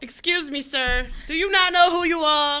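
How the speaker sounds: slow, drawn-out, stretched yell. Retelling how the Cheaters host yelled at a guest: imitating someone yelling. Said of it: "yelling at the dude".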